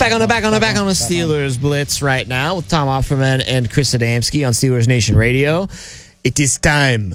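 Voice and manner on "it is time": put-on old baboon voice, much slower. Radio host announcing the next segment, in a Rafiki voice. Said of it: "I did that in the Rafiki voice in The Lion King".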